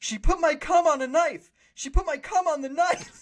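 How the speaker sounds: play-acted yelling, pitched very high. Retelling a framed kid being dragged away by cops: imitating a character yelling. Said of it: "he's yelling about how he's innocent".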